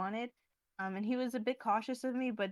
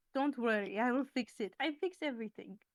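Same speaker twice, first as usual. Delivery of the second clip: acted Russian-accented speech; 2 semitones higher than usual. Quoting a man with tools and a stepladder, russian accent. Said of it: "He says this with a Russian accent, like".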